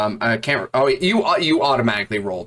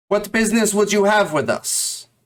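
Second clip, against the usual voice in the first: very high, calling-out voice; 10 semitones higher than usual. A voice from above calls out to the newcomers in the ruins, calling out. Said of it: "And a voice calls out".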